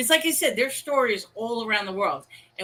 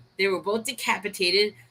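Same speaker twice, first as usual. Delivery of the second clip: plain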